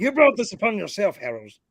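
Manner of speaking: put-on pirate voice.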